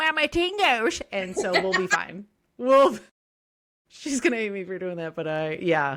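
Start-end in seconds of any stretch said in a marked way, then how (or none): 0.0-1.0 goofy, very high, squeaky put-on voice. Showing the voice done in cat mom snaps: silly put-on voice. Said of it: "that's when you do your stupid, silly voice, and it's like".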